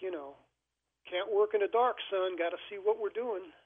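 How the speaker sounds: put-on thick, heavy Louisiana accent. Quoting a man who refused to turn off the overhead lights, thick Louisiana accent. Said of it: "he had this this thick Louisiana accent".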